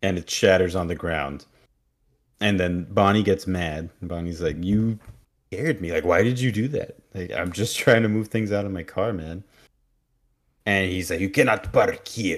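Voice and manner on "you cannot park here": really bad, put-on Russian accent. Retelling what a man said to an upset Bonnie: bad Russian accent. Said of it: "he has a really bad Russian accent, comparable to my bad Russian accent".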